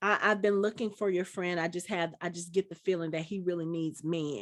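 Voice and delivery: ordinary talk, nothing marked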